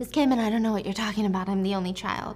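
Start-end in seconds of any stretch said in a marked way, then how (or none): none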